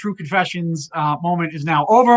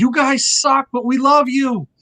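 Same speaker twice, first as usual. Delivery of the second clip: put-on acted, slurred drunken yelling; 8 semitones higher than usual. Retelling yelling out during a quiet ballad at a concert: imitating a drunken yell. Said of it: "I got up and I yelled".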